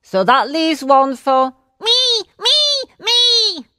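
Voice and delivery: very high rising shriek. Narrator reads Necky Becky jumping up suddenly, shrieking. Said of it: "shrieked Necky Becky".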